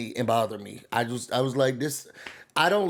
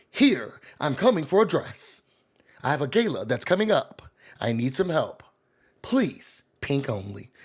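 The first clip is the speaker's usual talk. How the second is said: journalist's on-air broadcast voice. Mimicking how a journalist she knows always talks, in a put-on journalism voice. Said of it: "it seems like she's always talking like this".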